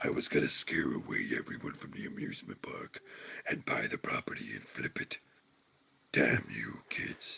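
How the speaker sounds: whispered, all breath. Voicing a villain unmasked by kids: Doctor Claw voice. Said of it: "it's got the Doctor Claw, uh, sound".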